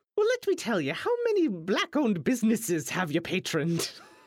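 put-on cage-fighter voice, lecturing tone. Answering a traveler who asks how to make money in town: woke Conor McGregor voice. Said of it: "why do you sound like woke Conor McGregor now?".

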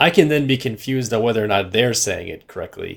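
ordinary delivery

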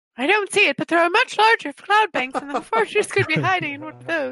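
very high-pitched cartoon-character voice. Answering the game master about the fortress, sounding like Minnie Mouse. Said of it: "I sound like Minnie Mouse now".

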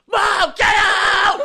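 put-on very high, very loud, childlike screaming. Describing a short where Percy yells at his mom; screaming as Percy. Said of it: "And he screams at his mom".

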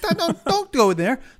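put-on shouting. Retelling reacting to a scary movie in the theater: imitating shouting at the screen. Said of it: "shouting at them".

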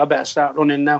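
plain

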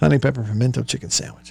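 very fast, laughing rush through the phrase.

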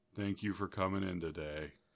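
acted, mournful, barely audible murmur. Retelling what a sad, slow grocery employee said: imitating a dolorous voice. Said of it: "literally the most dolorous voice you ever heard".

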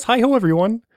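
very high cartoon puppet-like frog voice. Voicing the Kermit the Frog puppet greeting everyone: Kermit the Frog voice. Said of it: "I actually have Kermit the Frog here with us".

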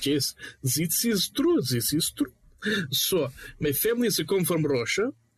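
put-on Russian accent in English. Showing off an accent imitation while joking along: put-on russian accent. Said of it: "I can imitate accents decently. This is one of them".

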